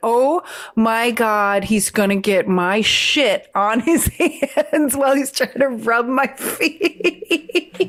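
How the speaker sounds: slow, panicked laughing.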